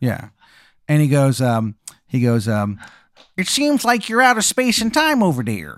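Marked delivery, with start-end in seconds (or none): 1.4-5.6 put-on bad Chicago accent, higher pitch. Telling a story, voicing the Wizard of Chicago to Jake in bad Chicago accent. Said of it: "the worst Chicago accent you've ever heard".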